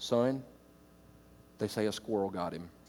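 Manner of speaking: put-on dead-serious, very low deadpan delivery. Retelling a father's reply about the grandfather's death: imitating dad speaking deadpan. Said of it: "my dad looked at me with a straight face".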